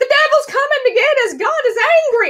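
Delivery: very high-pitched screaming voice. Retelling a power cut during a class in a church: imitating someone screaming. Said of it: "starts screaming".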